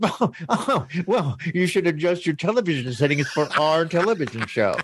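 put-on haughty, superior, snooty tone. Podcast hosts discuss a tv show; one mimics it in a mock-snooty tone. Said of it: "It's snooty".

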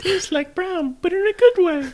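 very high, squeaky, loud character voice. Rereading a beer description on request, in Ralphie's voice. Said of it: "read that again in, um, uh, Ralphie's voice".

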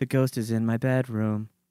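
very low, soft, dead flat monotone. Discussing the show Medium, doing a Patricia Arquette monotone impression. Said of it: "it sounds like she doesn't have any inflection".

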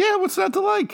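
squeaky, very high-pitched voice. Asked whether he liked this comic book: very high-pitched answer. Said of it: "Really high-pitched answer there".

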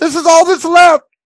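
panicked shriek, very high and very loud. A narrator voices a man coming out of the shop, screaming. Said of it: "He's screaming".

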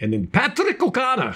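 joking Irish accent. Reading out a lineup name in a put-on Irish accent. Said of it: "That's my Irish accent".

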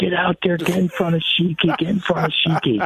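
mock hollering, very high, repeated yelling. Retelling a dad yelling from the fence at practice: imitating dad yelling. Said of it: "he's yelling".

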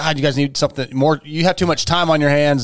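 ordinary talk, nothing marked

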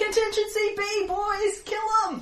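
very high, loud, barked drill-style shout. In a game, Michaela ducks a blow, draws her shield, and gives a battlefield drill shout. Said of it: "shouts in her best battlefield drill voice".

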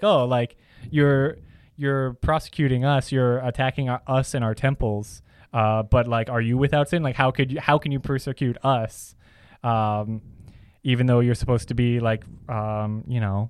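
usual speaking voice

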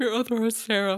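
words stretched out while yawning. A podcast host introducing themselves to listeners, yawning. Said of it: "Sorry, that was a yawn".

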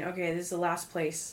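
normal talking voice

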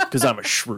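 put-on intense nerdy voice. Imagining a character showing up and fighting a creature: Dwight voice. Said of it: "Dwight to show up and be all like".

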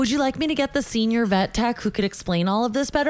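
ordinary delivery

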